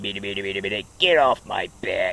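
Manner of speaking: low, put-on cartoon character voice. Showing off his good impression of a famous voice, put-on character voice. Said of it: "I can do a good impression of him. He goes like this".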